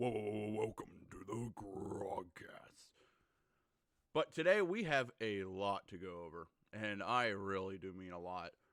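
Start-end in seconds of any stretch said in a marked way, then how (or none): 0.0-2.9 deep-voiced promo announcer voice. Podcast host opening the show, mimicking a typical announcer: deep announcer voice. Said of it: "one of those deep voice announcers that goes".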